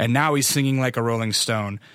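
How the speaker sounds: ordinary delivery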